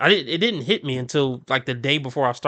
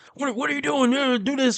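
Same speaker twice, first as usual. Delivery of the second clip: full-on, high-pitched screaming; 11 semitones higher than usual. Retelling how a man he worked with screamed at him, imitating someone screaming. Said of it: "he basically just screamed at me".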